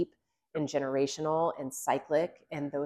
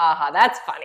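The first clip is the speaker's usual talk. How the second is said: put-on amused laugh, louder; 12 dB louder than usual. Retelling how the team laughed off a recruit's question: imitating laughing it off. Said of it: "we just started laughing".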